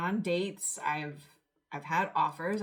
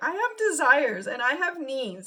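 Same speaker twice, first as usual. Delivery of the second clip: tearful, swooping, crying through the words; 9 semitones higher, 8 dB louder than usual. Retelling what a woman said about celibacy, imitating someone crying. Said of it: "and she's crying".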